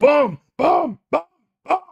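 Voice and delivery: very loud, high-pitched booming bellow. Saying boom during a game, Animal from the Muppets voice. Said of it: "I feel like saying it like Animal from the Muppets".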